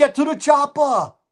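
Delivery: put-on, imitated yelling voice.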